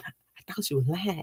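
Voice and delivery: very quiet, hushed half-whisper, barely there. Retelling something they once said about their mama, retelling a half-whisper. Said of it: "I'm of him whispering".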